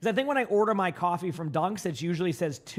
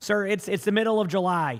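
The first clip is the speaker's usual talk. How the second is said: ordinary delivery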